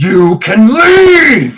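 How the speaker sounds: loud, bellowing, tiger-like roar, high and swooping. Game master voicing a character toward the players, roaring. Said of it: "he roars".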